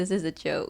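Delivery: plain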